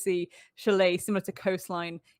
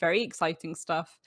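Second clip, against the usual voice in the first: usual speaking voice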